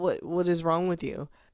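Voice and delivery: plain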